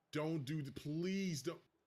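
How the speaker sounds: mock mad, exasperated, pleading tone. Retelling a teammate messing up, imitating own angry plea. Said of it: "I was so mad".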